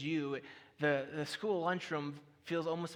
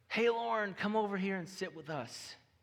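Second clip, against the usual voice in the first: put-on Texas twang accent; 4 semitones higher than usual. Retelling a classmate calling Lauren over to sit with them: John's Texas twang. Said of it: "in a classic Texas twang".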